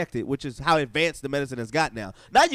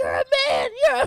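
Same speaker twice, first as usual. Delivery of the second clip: put-on tearful crying scream, higher and louder; 4 dB louder than usual. Retelling a man's outburst during sex: imitating crying and screaming. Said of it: "starts crying and screaming out".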